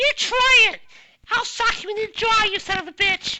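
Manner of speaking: very high-pitched, loud shouting. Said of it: "'cause she sounds like [name]".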